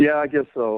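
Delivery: resigned, beaten-down tone. A man asked if he's ready to get her on the phone answers, defeated. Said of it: "you sound so defeated".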